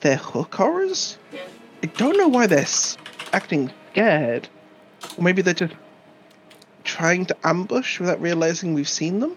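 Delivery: quiet, private mutter under the breath. Speaking in character about hook horrors that were spotted: quietly under my breath. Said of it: "just quietly under my breath".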